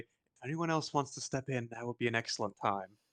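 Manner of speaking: quiet, hushed aside. A player speaks as Oric, turning to the rest of the party: Oric's hushed voice. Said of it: "kind of a hushed voice say".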